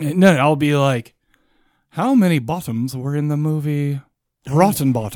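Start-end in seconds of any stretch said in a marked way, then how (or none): 1.9-5.2 put-on English, British accent. Acting out a trivia question at a quiz night: english accent. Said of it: "say it with an English accent like that".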